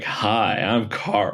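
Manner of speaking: play-acted, smoothest suave, flirtatious tone. Retelling a movie cameo greeting Anne Hathaway's character: suave Karl-Anthony Towns voice. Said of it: "in the most suave tone".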